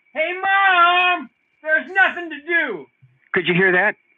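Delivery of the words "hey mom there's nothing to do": mock very high, very slow, drawn-out yell. Retelling a childhood complaint to mom: imitating own childhood yell. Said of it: "I really yelled out".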